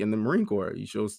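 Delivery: ordinary talk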